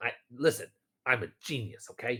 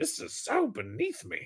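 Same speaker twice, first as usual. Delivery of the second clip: very high grumbling mutter, said under the breath; 8 semitones higher than usual. Voicing a gnome in a game scene, muttering to himself. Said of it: "is just muttering to himself".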